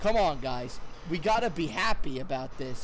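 lifeless, stiff, wooden bad-actor delivery. Mocking an actor's line delivery: imitating a wooden, flat delivery. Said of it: "The problem was he was so wooden. Like, he'd be like".

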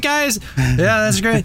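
high, put-on chattering voice. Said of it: "act like it's, it's Zoom".

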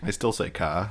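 bad Maine accent, "car" pronounced "ka". Answering about losing the accent, saying car the Maine way: Maine accent dropping the R. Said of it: "a really bad, like, Mainer accent".

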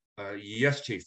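unsure, hesitant delivery. Retelling answering the chief when his name was called: imitating own unsure reply. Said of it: "really unsure of myself".

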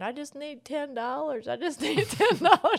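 loud, high-pitched hollering, called out twice. Retelling how a man knocked on doors, imitating someone hollering. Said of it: "starts hollering".

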